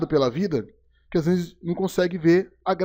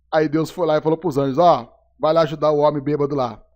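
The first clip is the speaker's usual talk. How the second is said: plain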